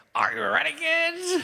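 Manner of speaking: very high, creaky, rough cartoon captain voice.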